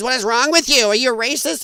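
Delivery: mock, held-back, half-strength accusing woman's scream. Commenting on a video, the speaker retells what a woman screams; imitating a woman screaming. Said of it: "And she actually screams".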